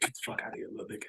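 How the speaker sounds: almost whispering. Retelling what one man said to another, almost whispering. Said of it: "He almost whispered it to him".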